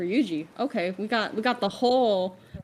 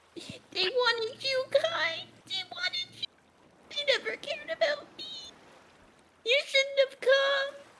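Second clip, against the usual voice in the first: tiny, very high crab voice; 4 dB quieter than usual. A storyteller voices Howie looking up and speaking to Kai, in a tiny crab voice. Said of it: "he says in his tiny little crab voice".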